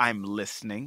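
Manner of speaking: voice dropped very low and soft. Recounting a line he said in his great Richard Kind voice: Richard Kind impression. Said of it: "in his great Richard Kind voice".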